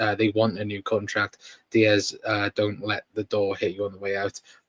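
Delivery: ordinary delivery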